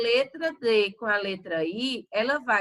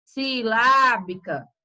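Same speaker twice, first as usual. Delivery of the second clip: lá in silábica held longer, stressed, stronger; 5 dB louder than usual. Teaching stressed syllables, saying silábica with a longer, stronger lá. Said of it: "eu demoro mais falando ele, já o resto eu falo rápido".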